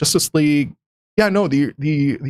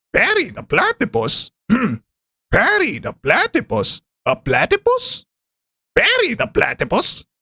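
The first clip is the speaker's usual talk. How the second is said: high, swooping cartoon-villain voice; 9 semitones higher than usual. Trying an impression by saying Perry the platypus: Doofenshmirtz voice. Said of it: "I want to make an impression of, ... Doofenshmirtz. I, I just have to say".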